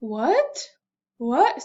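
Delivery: what starting low and climbing upward. Teaching the second tone to learners, rising tone. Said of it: "Second tone, rise it up".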